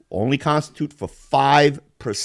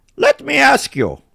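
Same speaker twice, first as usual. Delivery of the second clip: put-on weird Balkan accent; 12 semitones higher, 3 dB louder than usual. Describing a video creator's catchphrase: Balkan Dad accent. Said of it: "talks in this weird accent".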